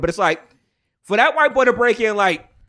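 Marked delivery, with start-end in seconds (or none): none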